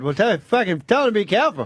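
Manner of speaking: put-on unintended, slipped-in Boston accent. Acting out his own reply in a comedy bit, in a boston accent. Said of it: "I put in a Boston accent by accident".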